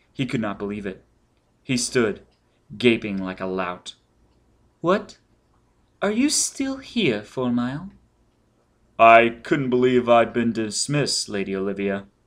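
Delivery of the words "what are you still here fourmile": very high, husky, silvery, cool, indifferent voice. Reading a story, a lady addresses a lingering man in a husky, silvery voice. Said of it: "She was a snow maiden, an ice princess with coral eyes and coral lips, ... was addressed in a husky, silvery voice".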